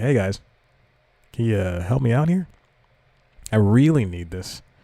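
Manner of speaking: put-on stern but understanding tone. Retelling how he urged the workers to hurry before his trip: retelling a stern request. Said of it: "I did it with a stern".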